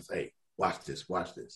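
very soft whisper under the breath. Retelling what a coach said on the first hole: imitating a whisper. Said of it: "he whispers".

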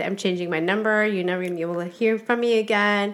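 ordinary delivery

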